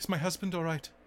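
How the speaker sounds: put-on thick British Indian accent. A woman in the game speaks to the player characters, thick British Indian accent. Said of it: "she says to you in her thick British Indian accent".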